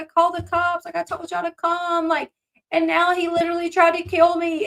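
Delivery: acted raspy, tearful sobbing, high and hoarse. Retelling a sister's second emergency call: imitating a crying hoarse voice. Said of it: "She's crying".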